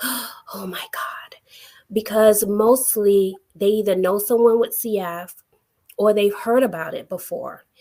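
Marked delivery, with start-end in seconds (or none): 0.0-1.3 play-acted, breathy, hushed, whispered gasp of shock. Speaker describing people reacting to their cystic fibrosis, imitating a shocked gasp.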